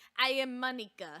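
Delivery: put-on speaking with a Russian accent. Starting a role-play where everyone is Russian, introducing themselves in a Russian accent. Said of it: "Everybody's Russian".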